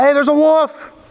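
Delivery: put-on boy's voice, high yelled cry.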